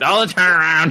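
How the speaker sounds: put-on yelling. Retelling yelling at a player on screen: imitating yelling at the screen. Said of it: "both yelling a lot".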